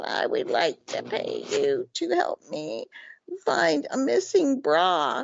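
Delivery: put-on very high, croaky, creaky elderly woman voice. Retelling meeting an elderly woman who hired the speaker, imitating her voice. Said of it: "And she goes".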